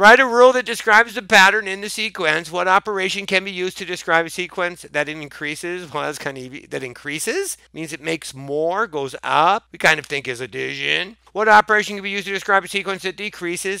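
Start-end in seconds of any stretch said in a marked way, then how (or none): 11.3-13.8 rattled-off, rushed, fast reading aloud. Reading sequence questions aloud from a worksheet: reading very fast. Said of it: "I know I'm reading very fast".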